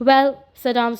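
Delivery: ordinary delivery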